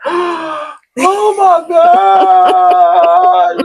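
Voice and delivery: very high, shrill, loud, losing-it exclamation. Telling a story about a guy eating a joint: imitating someone freaking out. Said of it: "he just freaking out".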